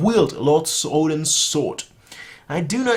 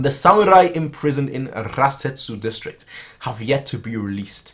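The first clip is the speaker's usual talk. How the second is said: plain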